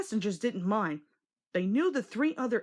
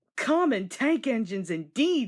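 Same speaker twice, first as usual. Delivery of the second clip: snorting scornfully; 3 dB louder than usual. Reading a story aloud, an engine scoffing at sulking engines: snorting scornfully. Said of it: "snorted Thomas".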